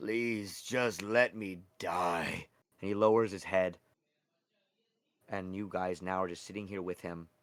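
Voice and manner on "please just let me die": hopeless, despairing pleading, very slow. Voicing a defeated mage begging the players to let him die: despairing, wanting to die. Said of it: "Mage Hookjaw just wants to die as he says".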